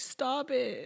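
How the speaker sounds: high, teary-voiced, crying delivery. Imitating the other speaker's reaction to a quick smile: imitating someone crying. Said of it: "Like, crying".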